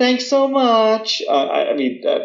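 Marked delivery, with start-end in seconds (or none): 0.0-1.2 airy, very high, artificial politeness. Imitating Americans meeting someone: mock airy politeness, two octaves higher. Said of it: "raise your voice two octaves".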